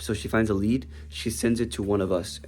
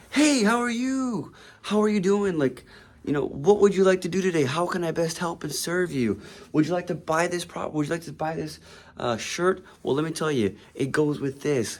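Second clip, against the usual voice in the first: super ecstatic, bubbly, pitched-up chatter; 8 semitones higher than usual. Retelling how a kid selling shirts greeted him: imitating someone bubbly. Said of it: "he was so bubbly".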